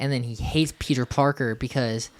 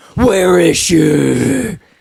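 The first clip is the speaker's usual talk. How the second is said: very loud, rough growl; 4 semitones higher, 10 dB louder than usual.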